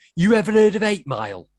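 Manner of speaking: put-on loud, high Cockney accent, young man's voice. Quoting a line said in a film by a lad from england: imitating a cockney lad. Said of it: "the Cockney lad from England going".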